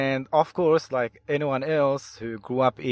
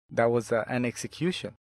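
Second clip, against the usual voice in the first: usual speaking voice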